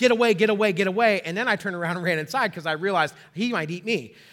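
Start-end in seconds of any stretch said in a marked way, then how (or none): 0.0-1.2 mock yelling, loud and repeated. Retelling clapping at a bear outside: imitating own past yelling. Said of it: "And I was yelling".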